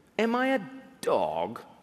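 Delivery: very slow put-on English accent. Reading the Philistine's words to David from the story, in a put-on English accent. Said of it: "Apparently the Philistine had an English accent".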